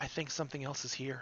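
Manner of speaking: very quiet, soft, hushed murmur. Narrating to the players, voicing Luna: soft Luna voice. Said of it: "you hear a soft voice going".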